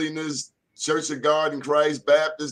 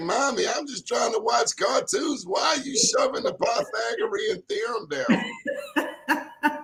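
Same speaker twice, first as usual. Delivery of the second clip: put-on high, whiny small child voice; 7 semitones higher than usual. Imitating a small child asked to do pre-calc: imitating a small child complaining. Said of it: "and they like".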